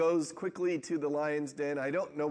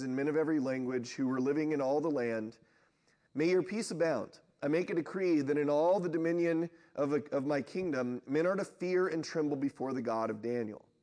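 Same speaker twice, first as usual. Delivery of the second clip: normal talking voice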